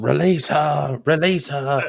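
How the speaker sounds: shouting. Voicing a character attacking a beast in a game: yelling. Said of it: "Silchus yells".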